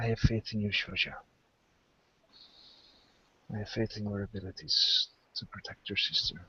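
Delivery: feeble, very weak, soft voice. Voicing the sick father speaking to his other child: very weak voice. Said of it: "speaks with a very weak voice".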